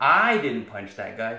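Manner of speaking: word "I" hit hard with stress. Showing stress in an english sentence, with the emphasis on i. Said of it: "suddenly the emphasis is on me".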